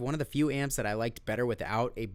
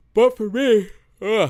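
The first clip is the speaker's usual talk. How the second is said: very high, very loud, drawn-out yawn; 10 semitones higher, 14 dB louder than usual. Speaker wrapping up an amp review for viewers, yawning. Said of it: "I'm yawning".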